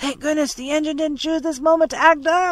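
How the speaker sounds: high, loud, carrying shout. Reading a sea story aloud, voicing Scott as he shouts. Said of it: "shouted Scott".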